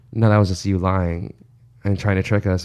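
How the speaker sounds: ordinary delivery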